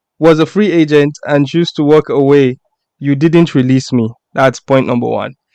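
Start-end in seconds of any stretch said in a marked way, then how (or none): none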